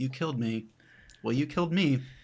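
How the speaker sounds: flat, dry, comic understatement, deadpan delivery. Picturing two rivals meeting again after killing each other, deadpan comedic delivery. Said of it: "a very deadpan comedic moment".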